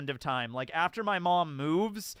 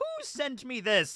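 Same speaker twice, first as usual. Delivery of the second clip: put-on uptight, prim, proper old lady voice, pitched up; 8 semitones higher than usual.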